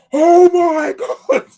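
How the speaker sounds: top-of-the-lungs yell, very high and loud. Retelling celebrating a goal in a quiet office: retelling a shout at full volume. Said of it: "I literally shouted at the top of my lungs".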